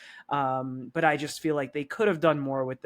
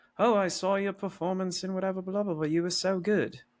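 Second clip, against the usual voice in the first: put-on English accent, higher pitch; 5 semitones higher than usual. Retelling a film scene where a steward compliments a guest: imitating an english accent. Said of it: "the steward says in an English accent".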